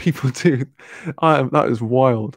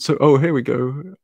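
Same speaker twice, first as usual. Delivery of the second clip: usual speaking voice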